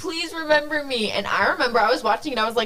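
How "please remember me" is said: mock crying, high, tearful pleading voice. Retelling a show scene where a forgotten character begs her brother: imitating Alex crying. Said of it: "she's, like, crying".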